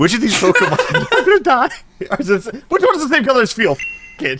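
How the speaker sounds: laughing while talking. Trying to read out a quiz question while laughing while talking. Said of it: "Stop laughing".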